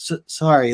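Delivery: put-on sad child voice. Retelling a comic scene where a son is brushed off: imitating a sad child. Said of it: "looking down".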